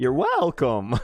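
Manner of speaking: voice cracking. Answering the thanks of the person he just saved, voice cracking. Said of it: "that was not a good voice crack".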